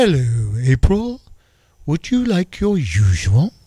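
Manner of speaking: sinister, menacing, villainous British accent. Imagining a voice at McDonald's greeting the co-host: evil British accent. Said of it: "Kind of an evil British accent".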